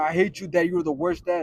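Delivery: ordinary delivery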